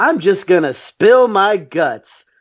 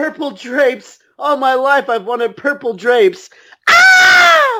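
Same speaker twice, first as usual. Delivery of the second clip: mock ecstatic, overjoyed screaming, high and swooping; 7 semitones higher than usual. Acting out a scream heard in a scene: Ned screaming in delight. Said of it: "Ned starts screaming".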